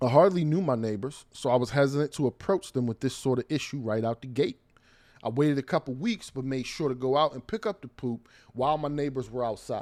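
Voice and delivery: ordinary talk, nothing marked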